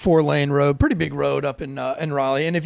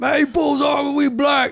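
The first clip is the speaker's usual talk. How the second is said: imitated drunken speech, higher; 10 semitones higher than usual. Retelling a traffic stop, quoting the passenger: imitating a drunk passenger. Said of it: "Passenger drunk as fuck".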